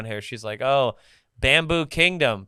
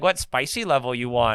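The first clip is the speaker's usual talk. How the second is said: put-on Thai accent. Retelling what a lady at a restaurant asked, in a put-on accent. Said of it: "we're doing accents on the".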